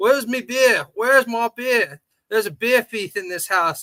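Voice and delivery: loud, slow, hungover-sounding complaining tone. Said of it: "Ozzy wakes up and he's all pissed off and hungover. He's like".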